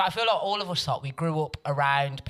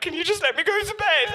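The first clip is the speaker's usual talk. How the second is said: put-on tearful voice, higher and louder; 5 dB louder than usual. Retelling getting caught by mum: imitating own past pleading. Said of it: "And then I'd just start crying".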